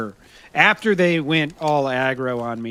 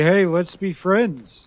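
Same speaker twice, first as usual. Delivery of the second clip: mocking, insincere, sarcastic friendliness, high-pitched; 6 semitones higher than usual. Retelling a player's friendship offer after being shot: imitating a sarcastic tone. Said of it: "kinda what I found to be a sarcastic tone".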